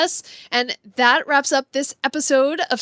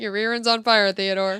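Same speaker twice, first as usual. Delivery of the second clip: low, mock deadpan, matter-of-fact delivery; 4 semitones lower than usual. Quoting a line from the movie: imitating matter-of-fact delivery. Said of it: "Just so matter-of-factly".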